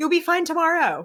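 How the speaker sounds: high, breezy, reassuring tone.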